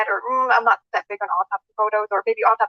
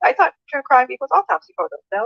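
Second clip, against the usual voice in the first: naive, innocent, plain, straightforward tone; 4 semitones higher than usual. Retelling a viewer's comment, imitating an innocent question. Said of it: "they asked just so, like, innocently".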